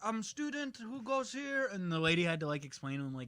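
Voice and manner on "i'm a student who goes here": put-on Eastern European accent, very high and slow. Retelling what a voter at the polling place said: imitating an eastern european accent. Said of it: "an Eastern European accent".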